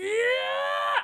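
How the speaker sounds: very high, drawn-out, top-of-the-lungs scream. Retelling a reaction to a character's announcement: imitating own scream. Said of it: "and I screamed".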